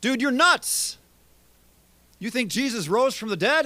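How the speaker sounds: loud, high-pitched outburst. Retelling how Festus tried to shut Paul up: imitating Festus's loud voice. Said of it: "He says it with a loud voice, as if to shut Paul up".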